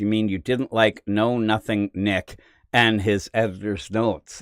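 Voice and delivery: ordinary talk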